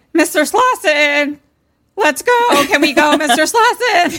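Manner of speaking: very high, loud, frightened, drawn-out freaked-out calling. Retelling how she called out for him after the radio turned on, mock-freaked-out. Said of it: "Great impression of a wet diaper".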